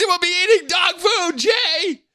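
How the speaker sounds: very high, shouted, doom-laden, ominous voice. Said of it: "That was always my mom's end of".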